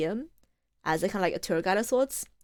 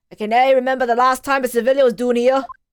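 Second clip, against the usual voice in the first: very loud, clumsy fake Irish accent; 4 semitones higher, 10 dB louder than usual. Voicing a line in a role, the speaker tries a bad Irish accent. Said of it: "Does he have an Irish accent?".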